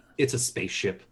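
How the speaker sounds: very low, dry, flat deadpan delivery. Retelling answering drunk people who asked about the hat, retelling a deadpan answer. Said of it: "and I just deadpanned to them".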